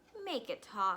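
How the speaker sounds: ordinary delivery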